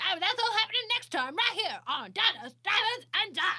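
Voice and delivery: excited announcer-style high shout. Mocking a TV host who always yells: imitating Guy Fieri yelling. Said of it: "that's how he talks".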